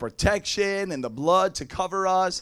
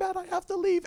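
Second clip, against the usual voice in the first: very high, tearful, sobbing, pleading cry; 12 semitones higher than usual. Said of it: "she jumps up and she's crying".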